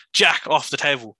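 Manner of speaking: mock stern, firm, authoritative delivery. Retelling how a librarian addressed a young man messing around on the tables, authoritative voice. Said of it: "put on his authoritative voice and said".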